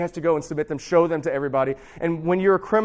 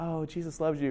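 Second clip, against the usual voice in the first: mock sweet, gentle, happy tone, quieter; 10 dB quieter than usual. Retelling the story, mocking how a priest might talk: imitating a happy, soft tone. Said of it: "like this happy, soft".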